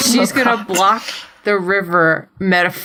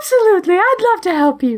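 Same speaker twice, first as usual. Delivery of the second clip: sweet, cute, high little magical voice; 11 semitones higher than usual. Telling a made-up story, the speaker voices the answer to a plea for help: cute little magic voice. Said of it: "in that cute little magic voice".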